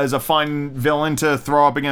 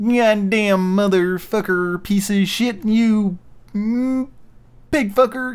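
high, very slow, drawn-out angry puppet voice; 6 semitones higher than usual. Showing what doing Kermit angry would sound like, angry Kermit voice. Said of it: "never really tried to do Kermit angry".

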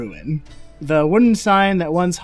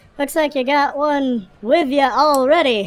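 put-on halfling voice, much higher; 8 semitones higher than usual. A game master voices the halfling bartender talking with the players: halfling bartender voice. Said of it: "tanned and salty halfling bartender with sandy curled hair and very sleepy eyes".

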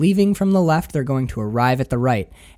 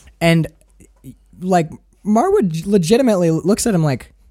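normal talking voice

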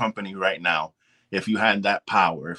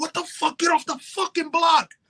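furious screaming with the pitch way up. Describing yelling at someone messing up every play, retelling a scream at somebody.

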